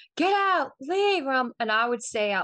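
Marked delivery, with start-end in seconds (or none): 0.2-1.3 play-acted shouting, very high-pitched yell. Recounting a crazy video with a spirit where a man kept shouting; retelling a shout. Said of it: "he's just shouting".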